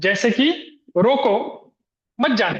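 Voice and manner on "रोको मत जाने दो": "roko" hit hard, followed by a break. Showing how stress placement changes a sentence's meaning: stressed 'roko', then pause. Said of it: "रोको के बाद मैंने एक पॉज लिया और रोको के ऊपर मैंने क्या किया है, बलाघात किया है".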